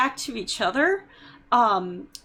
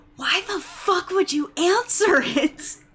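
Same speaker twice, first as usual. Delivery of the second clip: pitched-up stage whisper; 6 semitones higher than usual. Retelling what the dad whispered after a call was answered: imitating a whisper. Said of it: "he just kind of whispered".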